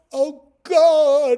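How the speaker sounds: very high, very loud pleading cry, God drawn out. Retelling holding up his rod to the sky, he retells calling out to God. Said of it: "I just called out".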